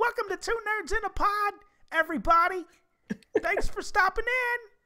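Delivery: tiny squeaky voice, very high. Imagining the hosts of another podcast greeting listeners: squeaky high-pitched voice. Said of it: "little squeakers pop up with their high pitched voices".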